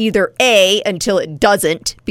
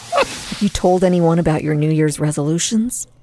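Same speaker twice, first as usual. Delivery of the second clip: hushed whisper; 3 semitones lower than usual. Asking another speaker about New Year's resolutions, whispering. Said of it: "Why are we whispering?".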